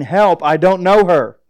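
mock shrieked, screaming outcry. Retelling being carried out of a food court as a little boy: imitating himself screaming. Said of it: "I started screaming".

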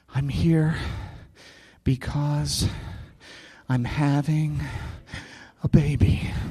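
very calm, soft, breathy, near-whispered voice. A pastor retells what was said to a receptionist, retelling a very calm line. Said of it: "very calmly says".

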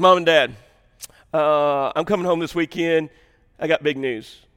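mock casual deadpan, flat, laid-back and unemotional. Retelling a son's phone call announcing big news: imitating Adam, laid-back and unemotional. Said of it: "he don't even get emotional".

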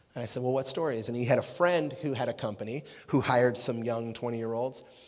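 ordinary talk, nothing marked

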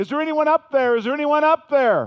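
very high, screamed-out screaming cry. Telling a story of a man hanging from tree roots, imitating him screaming out. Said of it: "he starts screaming out".

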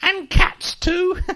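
put-on tiny, squeaky old woman voice, very high pitch. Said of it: "I heard this little squeaky voice say".

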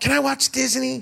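put-on small child voice, high and creaky. Retelling asking grandpa for the TV as a kid: imitating own child voice. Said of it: "That's what I sounded like when I was a kid".

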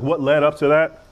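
excited yelling.

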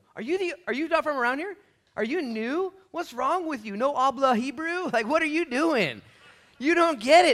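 loud, high-pitched, shrill, angry shouted retort. Acting out a disciple answering a stranger: imitating an annoyed reply. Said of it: "This guy's mad".

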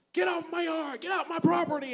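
piercing yell, very high, shrill and very loud. Retelling how she answered a knock on her door: imitating someone yelling. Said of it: "She starts yelling".

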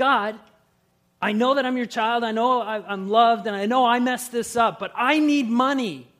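mock very loud, high, furious angry shout. Retelling a prayer yelled at God, imitating own angry yell. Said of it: "And I just yelled at him".

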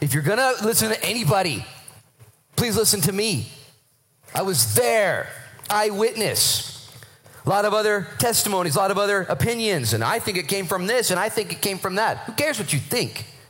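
acted fired-up excitement. Acting out Peter insisting he was an eyewitness: acting out a fired-up Peter. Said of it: "Peter here's fired up".

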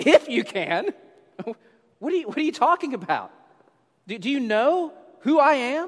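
playfully incredulous, with a twinkle. Performing his line with a bit of incredulity, incredulous with a twinkle. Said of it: "maybe a little bit of a twinkle in his eye. Maybe a little bit of a incredulity".

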